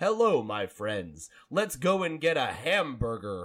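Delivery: deliberate, very slow, dragged-out delivery. Recalling an impression they used to love doing, slow John Wayne impression. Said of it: "you had this like very slow delivery, like it was like".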